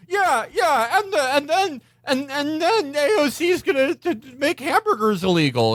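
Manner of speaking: mock very high, shaky, nervous stammering ramble. Imitating someone stumbling through a speech: imitating nervous shaky speech. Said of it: "he's like".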